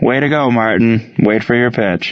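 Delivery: ordinary delivery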